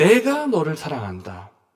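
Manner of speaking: strong, hard stress on 내가. Reading a korean sentence aloud, strongly emphasizing the subject: strong stress on 내가. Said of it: "내가라는 주어를 아주 강조해서 말하는 것입니다".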